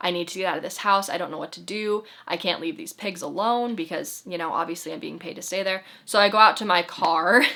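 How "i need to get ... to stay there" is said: tearful, sobbing, pleading voice. Retelling a phone call to mom while sobbing: retelling own sobbing plea. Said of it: "I'm talking to her and I'm sobbing".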